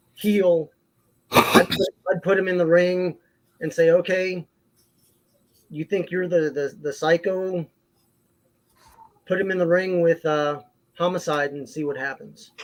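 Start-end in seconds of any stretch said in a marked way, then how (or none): none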